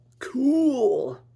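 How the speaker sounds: shrill, very loud, high, excited cry. Voicing Patrick trying on an upgraded suit, exclaiming. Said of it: "Patrick exclaimed".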